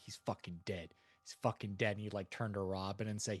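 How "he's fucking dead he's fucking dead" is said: put-on angry muttering. Voicing a character who mutters on his way up: muttering angrily in character. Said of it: "muttering to himself".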